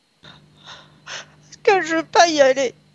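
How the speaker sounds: crying speech, high-pitched and slow. Explaining to the questioner why she does not want to go: crying while speaking. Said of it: "Pourquoi est-ce que tu pleures ?".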